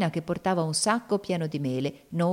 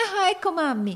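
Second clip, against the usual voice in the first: very high, sudden cried-out call; 12 semitones higher than usual. Narrated story: a character spots a woman coming in at the door: crying out. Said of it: "gridò Evangelina".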